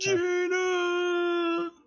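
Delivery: high-pitched tearful scream. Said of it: "he just screams out".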